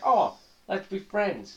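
put-on sweet, high, sing-song friendly voice. Acting out the second of three faces, the friendly one: put-on friendly smiling voice. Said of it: "big smile".

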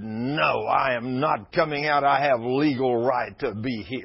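slow demonic voice, woman speaking in man's voice. Retelling an exorcism, the possessed woman answers the speaker: demon speaking in a man's voice. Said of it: "this woman's voice totally changed".

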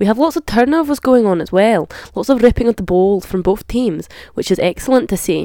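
put-on Scottish accent, sports commentator style. Giving match commentary on Scotland, the speaker uses a put-on Scottish accent. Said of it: "so I retire the Scottish accent for now".

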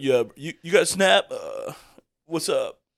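put-on young guy voice. Acting out how people now react to a guy in his hometown, young guy voice. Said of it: "that was my young guy voice".

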